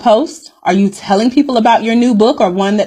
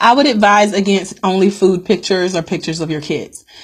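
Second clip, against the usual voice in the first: normal talking voice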